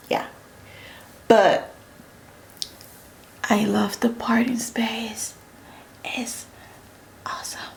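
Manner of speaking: soft, hushed whisper. Reviewing a lace wig: whispering. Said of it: "don't ask me why I'm whispering".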